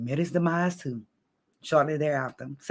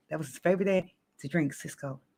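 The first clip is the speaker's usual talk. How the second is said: ordinary talk, nothing marked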